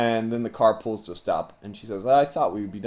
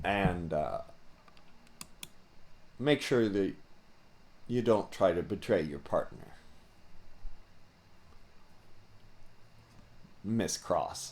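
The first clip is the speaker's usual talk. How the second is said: leaning in, whispering low and close into ear; 3 semitones lower, 11 dB quieter than usual. She leans in to you and speaks into your ear, whispering. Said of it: "kind of whispers something in your, in your ear".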